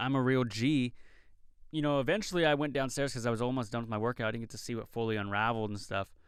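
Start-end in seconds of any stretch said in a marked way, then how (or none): none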